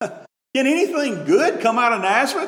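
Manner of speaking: mock scoffing, sarcastic tone. Quoting Nathanael's question about Nazareth: imitating a sarcastic remark. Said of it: "That's a sarcastic statement".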